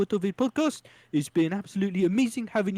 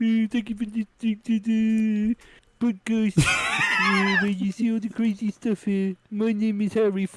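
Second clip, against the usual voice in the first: terrible, fake, put-on New Zealand accent; 2 semitones higher than usual. Podcast host doing the show's outro, in a terrible New Zealand accent. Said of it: "that was my terrible New Zealander accent".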